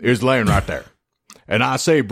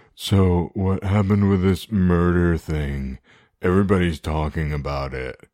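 low, flat, mumbling monotone; 4 semitones lower than usual. Recounting a podcast discussion, quoting the host's opening question, mumbling monotone Hannibal impression. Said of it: "speaks in mumbling monotone cadence".

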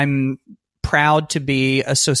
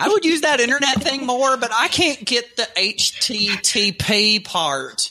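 fake Southern accent, higher; 10 semitones higher than usual. Playing someone not good with technology, put-on Southern accent. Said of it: "you suddenly had an accent when you were doing it".

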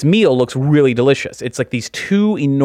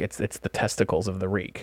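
lowered voice, much quieter; 6 semitones lower, 12 dB quieter than usual. Quoting a man explaining a rare entree, in a lowered voice. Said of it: "kind of lowers his voice".

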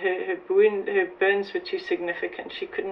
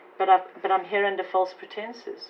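ordinary talk

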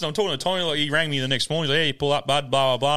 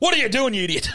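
mock curt, abrupt, impatient snapping tone; 9 semitones higher than usual. Retelling a trip, imitating the man he traveled with, an abrupt man. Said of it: "He's so abrupt".

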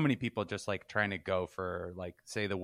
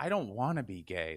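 mock-upset tone, delivered slower. Recalling going to his sister about it, imitating being upset. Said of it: "I'd come to her like upset".

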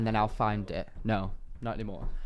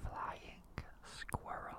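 quieter whisper. Saying the secret animal quietly so the other player cannot hear: whispering. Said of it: "I'm gonna whisper".

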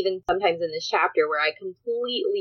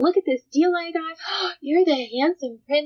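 excited put-on android voice, higher; 10 semitones higher than usual. Acting out the android coming in with a deal: excited android voice. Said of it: "She's all excited".

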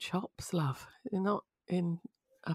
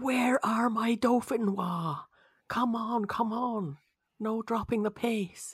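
mock very slow, drawn-out, held-back mild shout; 3 semitones higher than usual. Retelling how a chef shouted orders in the kitchen: imitating someone shouting. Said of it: "when he was shouting".

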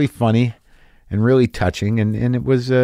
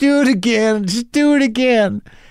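put-on high, hysterical, laughing and crying, pleading; 10 semitones higher than usual. Speaker recalls a man at a nearby table begging him to repeat his bit, imitating a hysterical man. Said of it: "He's hysterical, and he literally looks up and goes".

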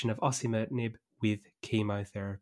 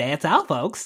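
imitated cartoon pig voice, higher and louder; 4 semitones higher, 6 dB louder than usual. Joking to Josh about sounding sick, doing a Porky Pig impression. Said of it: "you're always really good with the impressions".

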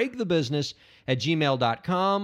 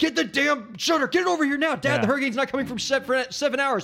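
put-on yelling, higher; 10 semitones higher than usual. Retelling parents during a hurricane: imitating parents yelling. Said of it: "yelling at the dog and".

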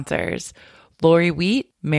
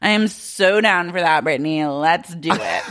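put-on drunk slurring, slower. Retelling what Sheena said to Brittany while blacked out, imitating Sheena's drunk slurring. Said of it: "Sheena's blackout".

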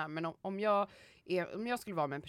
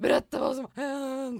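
put-on sobbing cry, much higher and louder; 8 semitones higher, 9 dB louder than usual. Retelling how he collapsed on the floor in tears, imitating him crying. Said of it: "ramlade ihop på golvet och bara grät".

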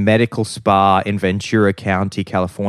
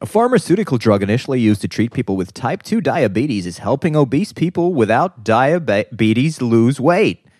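best put-on American accent; 4 semitones higher than usual. Reading a news item aloud: best American accent. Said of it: "I'll do it in my best American accent".

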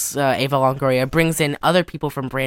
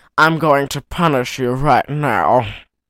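put-on slurred cartoon villain voice. Describing how a lieutenant character talks: Tim Curry voice from Wild Thornberrys. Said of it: "sounds like Tim Curry in, um, Wild Thornberrys".

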